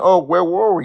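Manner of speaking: slow, sarcastic, whiny, self-pitying mocking voice. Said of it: "trying to play the victim card saying".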